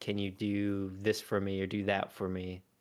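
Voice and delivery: ordinary talk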